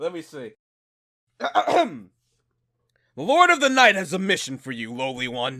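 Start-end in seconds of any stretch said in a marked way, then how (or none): 1.4-5.6 epic, grand dramatic voice, slower. A character decides to give an epic voice for the moment: epic voice. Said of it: "I gotta give an epic voice for this".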